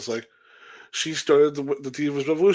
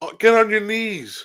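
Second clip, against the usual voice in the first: slow, high, loud, drawn-out screaming; 7 semitones higher, 4 dB louder than usual. Retelling what is screamed during a wrestling move: imitating someone screaming. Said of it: "And you hear her screaming".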